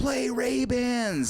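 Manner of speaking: put-on, very high-pitched scream from far away. Retelling a request shouted by a guy across the pond: imitating someone screaming. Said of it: "this guy screaming".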